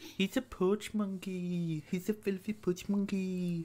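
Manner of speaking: weird put-on voice, hushed and slow. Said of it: "why are you talking like that".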